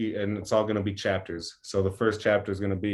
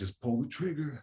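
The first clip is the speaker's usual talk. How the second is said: put-on demon voice, pitched up; 6 semitones higher, 6 dB quieter than usual. Describing a planned music video scene, a demon speaking: demon voice. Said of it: "the demon voice is like".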